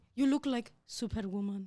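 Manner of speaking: put-on Persian man's accent. Quoting what a man told the speaker, persian accent. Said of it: "Because he's Persian".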